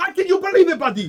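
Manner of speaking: acted-out, high, swooping, furious ranting. Retelling a man's phone call to Chad, imitating a furious rant. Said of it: "he is losing his shit on the phone".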